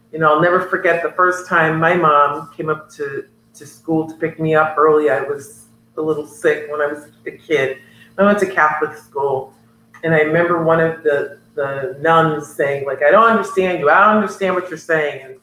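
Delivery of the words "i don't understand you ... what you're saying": plain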